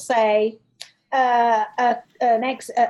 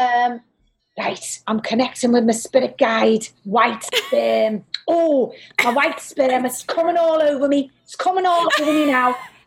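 acted, theatrical stage psychic spirit-medium voice. Describing how a psychic from Liverpool comes in: Reg Corker impression. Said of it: "I'm just doing a very brief impression of him".

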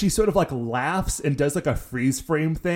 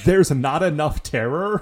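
usual speaking voice

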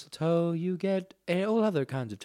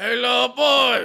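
strained put-on caller voice, higher and louder; 6 semitones higher, 8 dB louder than usual. Playing a caller on the phone to the hosts: strained Pastor Christmas voice. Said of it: "this hurts my voice".

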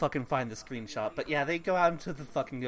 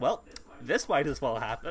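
ordinary talk, nothing marked

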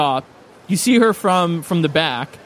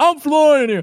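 put-on pitched-up old Italian tough-guy voice; 9 semitones higher, 3 dB louder than usual. Imagining how a character will talk once he learns to speak: old italian guy voice. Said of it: "He'll go".

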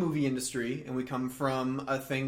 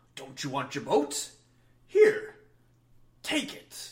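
enticing, luring killer clown voice. Comparing two actors' versions of a scene, imitating Tim Curry as Pennywise. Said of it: "Tim Curry went ahead and was like".

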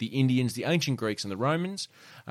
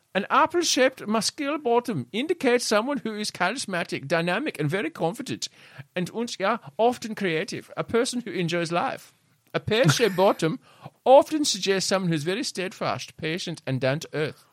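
fake German accent, much higher; 8 semitones higher than usual. Quoting rumpologist Ulf Beck aloud: Ulf Beck German accent. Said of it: "Can you possibly ever do a German accent".

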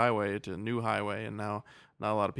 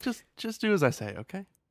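mock-friendly, comforting tone, much higher; 10 semitones higher than usual. Describing how a character delivers a line, imitating a friendly, comforting tone. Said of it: "he says it in like a really friendly, like comforting way".

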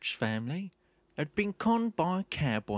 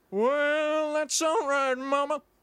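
slow rock-and-roll drawl with long stretched well; 9 semitones higher, 3 dB louder than usual. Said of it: "you'll go [name]".

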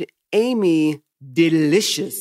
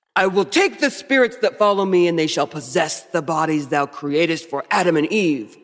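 put-on devil voice. Taking a reading turn in a group, in a put-on Lucifer voice. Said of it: "Let me get my Lucifer voice on".

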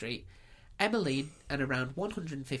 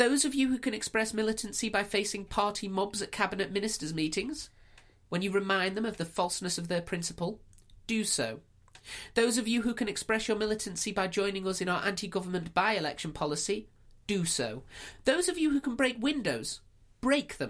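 put-on proper woman's voice, pitched up; 7 semitones higher, 4 dB louder than usual. Asked for an extract of her Albert Hall speech, you perform it in a proper woman voice. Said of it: "in your woman voice, proper woman voice".

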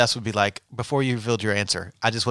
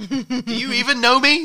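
put-on shout, higher; 13 semitones higher than usual. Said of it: "Stop yelling at me".

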